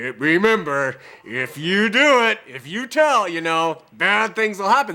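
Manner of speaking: mock dark, foreboding, ominous voice. Retelling what they still say, in a put-on ominous voice. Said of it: "with this ominous voice".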